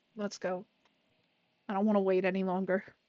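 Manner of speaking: low, flat monotone voice near tears. A player voicing a character in a role-play scene, monotone, tearful voice. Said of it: "in another monotone voice, but with more tiered, tearing sound to her voice".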